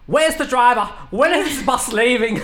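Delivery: acted-out old lady hollering, loud and high-pitched. Telling a story about a woman on a bus, retelling her yell at the attendant. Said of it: "she yells out of the bus".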